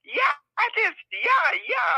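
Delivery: loud, very high, squeaky blurt. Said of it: "going up real loud with the high voice".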